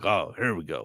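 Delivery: grouchy, grim, deep hard-boiled noir detective voice. Describing the game's main character: grim deep noir detective voice. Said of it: "You got a real grim, deep voice like this".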